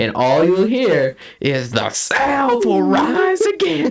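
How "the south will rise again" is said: put-on very high, shrill, swooping, rising scream. Retelling what students shouted walking out of school: imitating someone screaming. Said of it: "The fact that we were screaming that".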